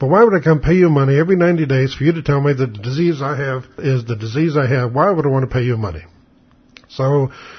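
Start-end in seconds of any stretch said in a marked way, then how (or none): none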